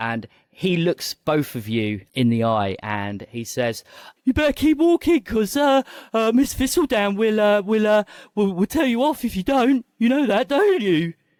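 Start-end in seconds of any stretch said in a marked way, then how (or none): 4.2-11.1 put-on very high, cracking adolescent boy's voice. A narrator voices a boy facing two people, voice breaking mid-puberty. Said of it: "his voice is beginning to break".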